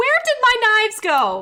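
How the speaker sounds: woman yelling, very high, swooping shout. Narrator voicing a woman shouting from outside her house, woman shouting from her house. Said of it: "She's shouting from outside of her house".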